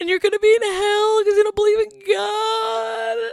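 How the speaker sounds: play-acted very high, loud tearful crying wail. Retelling what your crying ex-boyfriend said one day, imitating ex-boyfriend crying. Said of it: "my ex-boyfriend just crying one day".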